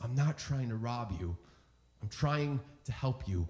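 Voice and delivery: whispered voice. Retelling a scene where a man speaks to Bilbo Baggins, retelling a whisper. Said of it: "he whispers".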